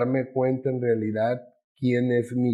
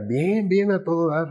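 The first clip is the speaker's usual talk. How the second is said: play-acted cheerful, easy, pitched-up delivery; 5 semitones higher than usual. Retelling an answer to a psychologist's question: imitating own smiling reply. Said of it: "con una sonrisa en la boca le decía".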